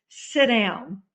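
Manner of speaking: mock stern, no-nonsense fatherly voice. Retelling her father's reply about joining a group, imitating a stern father. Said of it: "my father said in a stern voice".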